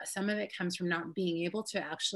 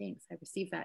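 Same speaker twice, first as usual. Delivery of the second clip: soft mumble, muttered under the breath; 7 dB quieter than usual. Saying thanks when not confident enough to say it aloud, mumbled under the breath. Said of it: "So I would mumble it under my breath".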